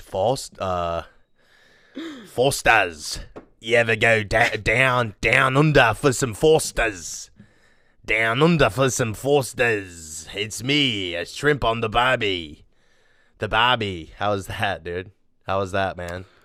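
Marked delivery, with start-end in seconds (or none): 2.3-14.1 put-on Australian accent. Doing a beer ad bit after being asked for it: Australian accent. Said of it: "You wanted me to go Aussie with it".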